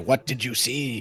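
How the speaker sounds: stage whisper, as loud as possible. Asking the others in character what they saw: loud whisper. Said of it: "I maybe whisper as loudly as a whisper can be".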